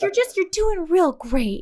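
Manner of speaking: acted condescending, talking-down encouragement. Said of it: "That condescending, uh, pa-, patronizing".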